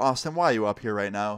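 ordinary talk

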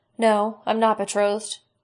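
plain reading voice

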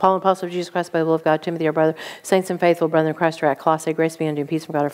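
very fast rattled-off reading, still understandable. Showing how to read scripture fast yet understandably, reading very fast. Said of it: "as fast as I can, where I can understand it, but it's fast".

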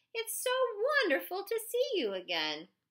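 put-on friendly voice. Narrator reading a character's greeting to the narrator, in a fake friendly voice. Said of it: "in the friendly voice he used to fool his parents".

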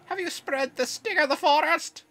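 very high, loud, fake put-on Welsh accent. Reading a game character's dialogue aloud in a put-on Welsh accent. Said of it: "Why is that the voice?".

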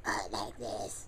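small put-on cave creature voice. Speaker showing off the different voices he does, in a Smeagol voice. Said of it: "it sounded like Smeagol".

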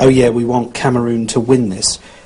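ordinary talk

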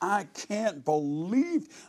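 put-on high, raw scream, full out. Recounting a motel stay, retelling the next room's shout: imitating Philip screaming. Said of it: "I hear Philip just screaming".

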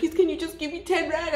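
high, tearful, hysterical crying plea. Retelling being stranded and begging people at car windows, acting out crying, hysterical pleading. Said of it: "I'm crying".

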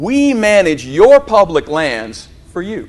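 put-on patronizing, talking-down tone, slow condescending drawl. Quoting a man's line repeated in a meeting: mock-condescending tone. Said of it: "how condescending it sounded, but he said it repeatedly just like this".

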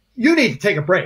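tense, charged-up delivery. Imitating people who keep ordering a break: imitating a charged tone. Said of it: "with a charge on their voice going".

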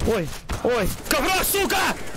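panicked, very high, alarmed outburst.

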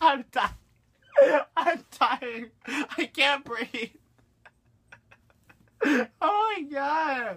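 high, drawn-out laughing fit, words very slow. Speaker on video can't stop laughing at a joke: laughing hard. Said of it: "I don't think I ever laughed this hard on video".

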